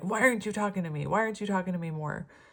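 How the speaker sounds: fast, needy, pressing, urgent pleading tone. Acting out someone whose person hasn't reached out: imitating someone urgently demanding contact. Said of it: "you feel this urgency to chase them".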